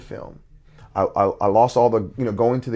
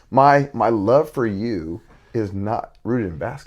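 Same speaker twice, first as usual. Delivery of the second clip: choked-up voice catching with feeling. A father speaking about what he wants to show his kid; choked up. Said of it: "I kind of get choked up on this one".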